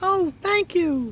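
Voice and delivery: tiny, very high, squeaky mouse voice. Reading a story aloud, the mouse thanks the Woodman in a squeaky little voice. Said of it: "That's my squeaky little voice".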